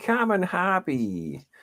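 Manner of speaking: put-on very high-pitched New England accent. Repeating the other speaker's words back: imitating a New England accent. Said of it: "You sounded very New England then".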